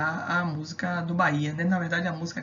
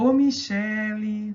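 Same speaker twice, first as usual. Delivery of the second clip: long, drawn-out stressed che in Michele; 4 semitones higher, 4 dB louder than usual. Showing how people in Salvador call someone: drawn-out stressed syllable in Michele. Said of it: "Você demora mais naquela palavra, naquela sílaba".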